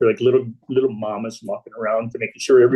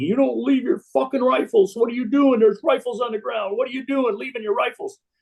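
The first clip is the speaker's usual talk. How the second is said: mock very high, shrieking, screamed yell; 12 semitones higher than usual. Retelling how two veterans reacted when men dropped rifles during incoming: imitating veterans screaming. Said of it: "they started screaming".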